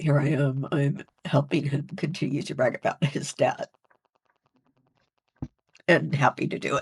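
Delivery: tearful voice, crying through the words. Speaker, recalling home hospice for their mom, speaks through tears: crying while speaking. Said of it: "even if I'm crying right now".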